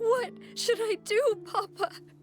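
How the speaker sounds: high, tearful, words broken up by crying. Asking papa what to do: crying while speaking. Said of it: "she's crying again".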